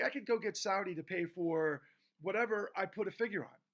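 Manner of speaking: normal talking voice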